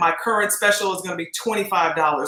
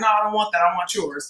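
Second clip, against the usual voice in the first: mock annoyed, attitude-filled tone. Recounting to another speaker how he reacted, retelling his attitude. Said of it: "had an attitude about it".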